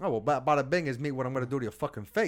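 put-on New Jersey mobster accent. Asked by another speaker to talk in a Jersey accent; Jersey mobster accent. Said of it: "You said you want me talking a Jersey accent".

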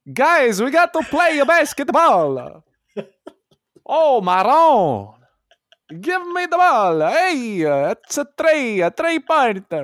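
put-on very high-pitched voice with an Italian accent. Talking basketball, imitating how the player talks: Danilo Gallinari impression. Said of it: "He talks like that".

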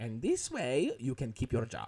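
full-on put-on German accent, swooping, with gusto. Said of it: "all I'm doing is this accent".

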